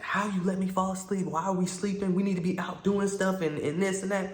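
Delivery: acted-out scolding half-yell, mild and high-pitched. Retelling being woken by her after falling asleep: imitating her yelling. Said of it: "she's, like, yelling".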